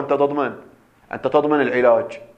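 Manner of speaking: ordinary talk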